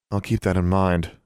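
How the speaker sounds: ordinary delivery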